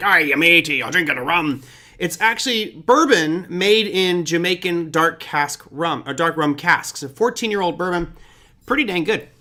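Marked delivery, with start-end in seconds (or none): 0.0-1.6 put-on pirate voice. Joking that the bottle looks like pirate ship rum: pirate voice. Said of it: "something I'd see on a pirate ship".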